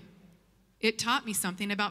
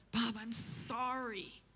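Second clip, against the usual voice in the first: put-on frail voice, quieter; 7 dB quieter than usual. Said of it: "this frail voice just kinda crawls out of the phone".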